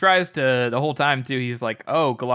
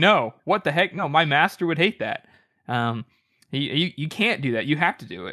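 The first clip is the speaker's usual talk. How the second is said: put-on appalled, flustered, horrified, stammering delivery; 3 semitones higher than usual. Retelling a character's reaction to quitting training, imitating a horrified character. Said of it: "Yoru is, like, horrified".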